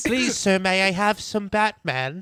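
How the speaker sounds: high, polite, gentle voice. Joking about who is in the studio: Oliver Twist voice. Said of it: "Oliver Twist?".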